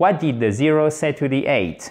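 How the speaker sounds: downward tune, pitch falling on eight. French lesson on English question intonation: falling intonation at question end. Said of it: "l'intonation générale de la phrase va, ceci est une flèche descendante, chers amis, va descendre".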